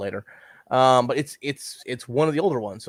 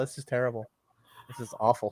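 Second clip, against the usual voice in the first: usual speaking voice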